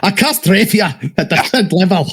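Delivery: slow put-on Scottish accent. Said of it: "I'm gonna do a Scottish accent".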